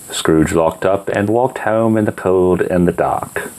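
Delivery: ordinary delivery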